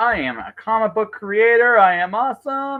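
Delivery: high, very slow, loud, drawn-out grand boasting. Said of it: "do it to the loudest voice possible".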